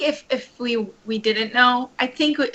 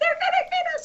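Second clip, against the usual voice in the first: mock screaming, higher pitch. Retelling what the bike guys shouted near the finish line: imitating someone screaming.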